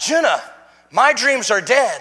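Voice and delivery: increasingly agitated voice. Retelling a dream reply to a daughter's voice: retelling own agitated reply. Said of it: "a little more agitated each time".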